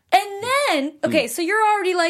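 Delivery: ordinary delivery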